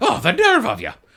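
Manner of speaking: put-on indignant Scottish accent. Retelling a movie scene, quoting the character Nanny: imitating Nanny's Scottish accent. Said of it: "'Cause Nanny has a Scottish accent".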